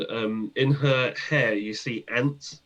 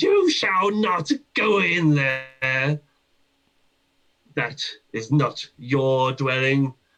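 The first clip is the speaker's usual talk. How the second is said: put-on slow, drawn-out, echoing old hag voices; 3 semitones higher, 4 dB louder than usual. Voicing three hags warning the players away: echoing voices of three hags. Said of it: "you hear the three voices, uh, sort of echoing around the room".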